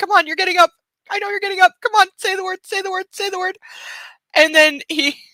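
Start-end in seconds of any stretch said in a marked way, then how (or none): 0.0-3.6 very high, puzzled, eager, confused puppy voice. Retelling how the dog waited for the signal, voicing a confused dog.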